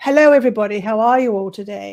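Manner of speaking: fake, put-on British English accent. Giving the British English translation of a greeting: put-on British English accent. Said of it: "The British, the British English".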